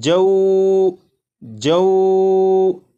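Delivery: stretched, drawn-out reading, elongated sounds. Demonstrating the stretched way not to read the letters, stretched, drawn out. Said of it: "खींच कर पढ़ें तो ये इस तरह पढ़ा जाएगा".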